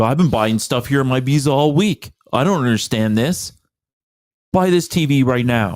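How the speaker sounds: acted indignant, demanding, screaming angry rant. Retelling what an angry customer said after his card failed, imitating a screaming customer. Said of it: "and then just like screaming about".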